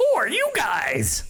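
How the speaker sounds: high-pitched talking parrot character voice. A storyteller voices a parrot looking down at the heroes: parrot voice. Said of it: "do I want to do that voice?".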